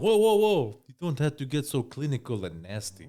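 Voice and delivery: put-on Russian accent sounding Spanish. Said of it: "You gave that a Spanish accent".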